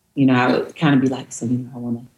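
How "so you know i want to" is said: timid, soft, hushed murmur under the breath. Retelling early attempts at talking to oneself: imitating own past half-whisper. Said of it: "I used to whisper".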